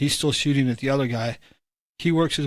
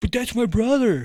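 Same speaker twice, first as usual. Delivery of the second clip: high-pitched yell from the background; 9 semitones higher than usual. Retelling someone in a video's background: imitating someone yelling. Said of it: "somebody in the background yelling".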